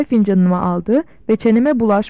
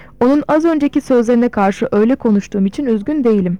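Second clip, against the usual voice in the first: ordinary delivery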